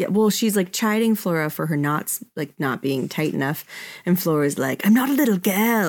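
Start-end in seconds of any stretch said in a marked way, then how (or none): 4.8-5.9 put-on New Zealand accent. Recapping a Xena scene, quoting Flora's reply to Xena in New Zealand accent. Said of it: "She says it in a really good New Zealand accent".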